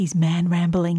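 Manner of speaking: put-on whisper. Retelling what Molly whispered about Darren: imitating Molly whispering. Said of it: "she whispers and she goes".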